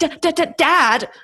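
weird, very slow, high fake stutter. Imitating an actress's weird fake stutters: imitating a weird fake stutter. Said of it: "she does these weird fake stutters where she's like".

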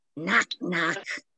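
growled out from the throat, guttural. Retelling Gross asking if anybody is there, and Janet answering: Janet's growly voice. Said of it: "in a growly voice".

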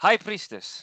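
shrill yelling, pitched very high. Addressing the old high priestess after being told to speak up: yelling. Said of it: "Don't yell at me".

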